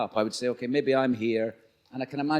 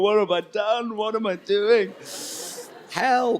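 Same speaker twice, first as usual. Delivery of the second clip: put-on high, tearful, broken crying voice; 9 semitones higher, 4 dB louder than usual. Retelling calling his wife during directing doubts: retelling own past crying. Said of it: "crying down the phone to my wife, going".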